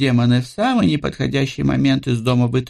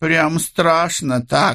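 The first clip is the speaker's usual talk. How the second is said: scornful, dismissive, contemptuous scoffing tone; 3 semitones higher than usual. Frisha answering Li's threat to use force, contemptuous. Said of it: "презрительно сказала Фриша".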